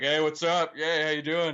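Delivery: put-on boastful swaggering voice. Imitating a wrestler blocking like a guy at a bar: imitating a guy showing off at a bar. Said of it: "like they're leaning on the bar trying to impress a chick".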